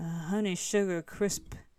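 put-on deep voice. Joking about showing up on the podcast talking like this: put-on deep voice. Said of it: "I talk like this all day".

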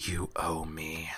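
hushed, very quiet, private half-whisper. Voicing a character leaning to a player's ear mid-translation: half-whispering. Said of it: "whispers in your ear".

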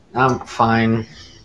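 low, down, unhappy, depressed voice. Sick caller answering how they're feeling, sounding depressed. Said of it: "you don't sound fine".

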